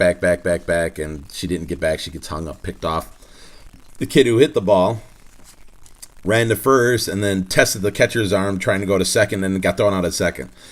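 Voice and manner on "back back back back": plain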